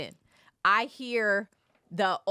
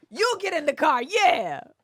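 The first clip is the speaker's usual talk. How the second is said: acted-out, high, angry yelling; 6 semitones higher, 4 dB louder than usual. Retelling telling someone to get in the car: retelling own yell. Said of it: "And I'm yelling it from inside the sprinter".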